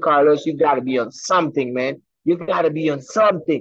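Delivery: ordinary delivery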